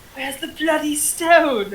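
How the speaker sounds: barely audible, very quiet half-whisper. A player's character quietly asks a man a question, quiet half-whisper. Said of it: "I just very quietly whisper to the guy".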